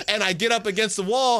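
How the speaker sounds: ordinary talk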